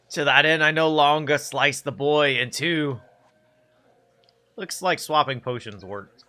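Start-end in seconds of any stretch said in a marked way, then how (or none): 0.1-3.0 slow, deliberate character voice. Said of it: "that's the stocking voice".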